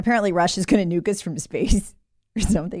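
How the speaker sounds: laughing while talking, can't keep straight face. Repeating a claim about Russia, laughing while talking. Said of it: "I can't even say it with a straight face".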